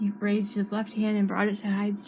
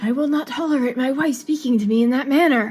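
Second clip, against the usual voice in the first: very loud, regal tone turning into aggressive outburst; 4 semitones higher, 9 dB louder than usual. Narrator reading a self-proclaimed king rebuking the man he calls his wife, suddenly aggressive. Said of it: "Gact's voice suddenly changed from regal to aggressive".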